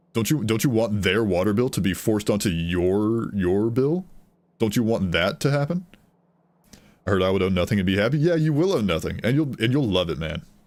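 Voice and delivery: worked-up, riled, heated, drawn-out ranting. Ranting with sarcastic questions, then catching himself: getting heated. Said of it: "I'm getting very heated about this".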